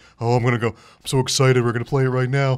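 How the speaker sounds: mock-unenthused, flat, unexcited monotone. Mimicking a friend who isn't excited to play a new game, imitating someone unexcited. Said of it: "not excited".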